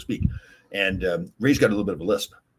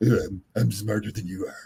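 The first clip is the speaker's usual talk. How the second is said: fake smug know-it-all tone. Retelling how a coworker imitates Eddie: imitating Eddie's voice. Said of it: "he imitates him".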